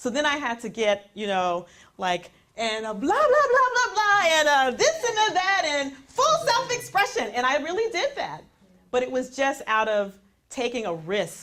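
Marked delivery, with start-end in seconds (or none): 2.6-7.3 flamboyant full-out gushing, very high and swooping. Speaker acts out going full self-expression after being called over the top: retelling over-the-top delivery. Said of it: "when she said over the top".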